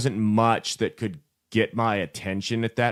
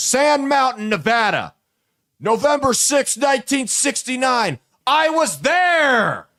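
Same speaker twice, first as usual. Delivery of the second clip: very high, drawn-out, increasingly worked-up rant; 6 dB louder than usual. Telling a story about a man in a store, retelling a worked-up rant. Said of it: "getting more and more worked up".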